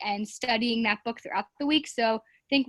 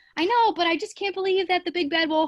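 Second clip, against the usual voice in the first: high, louder, squeaky chicken voice. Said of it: "when I'm the chicken".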